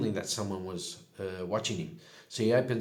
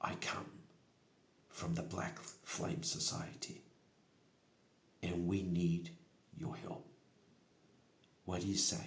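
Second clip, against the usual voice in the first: soft, close, secretive whisper; 8 dB quieter than usual. A storyteller voices a tiefling bending close to someone's ear, whispering. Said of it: "bends over and whispers in his into Ymir's ear".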